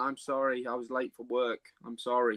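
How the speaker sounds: plain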